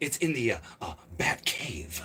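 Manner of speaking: halting, hesitant, broken-up, breathy, soft, hushed delivery. Recalling how Batman spoke on the old show, the speaker does an Adam West impression. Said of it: "You sounded just like that guy".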